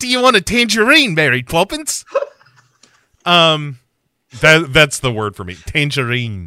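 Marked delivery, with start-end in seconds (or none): 0.0-2.0 put-on New Zealand accent, much higher, louder, faster. Mimicking how a man talks, addressing mary poppins: put-on kiwi accent. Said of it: "how you get into the Kiwi accent".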